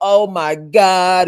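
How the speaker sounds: put-on fake tearful politician voice. Retelling a mayor's fake crying scene at the park: imitating Karen Bass fake crying. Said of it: "putting on this fake scene and crying like".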